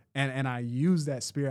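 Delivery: ordinary talk, nothing marked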